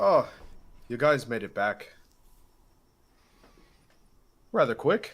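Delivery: really bad fake Irish accent, very loud, swooping. Voicing a character welcoming the group back, in a really bad Irish accent. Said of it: "It's like really bad".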